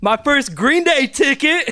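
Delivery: very loud, very high-pitched yell. Showing an item in show and yell, yelling the item name. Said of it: "Just yell the item".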